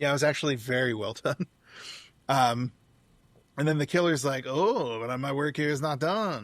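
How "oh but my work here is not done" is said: sudden, slow, put-on stage French accent. Retelling the killer's words after the kill, in a French accent. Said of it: "He has a French accent suddenly".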